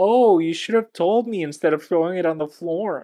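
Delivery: whining, complaining, whiny tone. Retelling what a woman said, appearing behind the speaker at the dryer, in a whiny voice. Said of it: "in a whiny voice".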